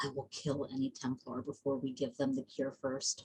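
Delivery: barely audible, very quiet, low half-whisper. In a role-play game, a character half-whispers to Clay: half-whispering very quietly. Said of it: "going to whisper very quietly to Clay".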